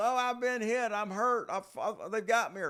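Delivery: frantic screaming, stumbling over words. Retelling the night a man's bed fell, imitating him yelling and screaming. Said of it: "he just started yelling and screaming".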